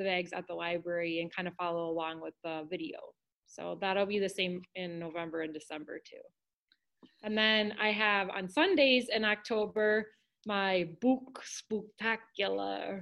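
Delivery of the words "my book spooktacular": put-on halloween vampire character voice. Announcing Sunday book events in October to listeners, in a vampire voice. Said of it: "my vampire well, voice".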